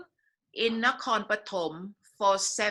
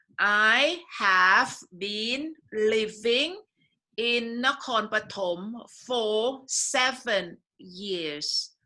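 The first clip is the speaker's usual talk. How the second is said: slow, deliberate, v stressed in living and seven. Showing a learner how to say the sentence: slow, stressing the V sounds. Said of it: "emphasize on the V sound".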